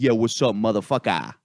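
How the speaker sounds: put-on casual, street-talk Boston accent. Retelling how a guy from Boston in prison talked, in a Boston accent. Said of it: "still has a Boston accent".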